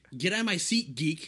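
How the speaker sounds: play-acted, mean, schoolyard-style jeering taunt. Retelling telling someone in the seat to leave: imitating a bully's taunt. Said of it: "You sound like a bully".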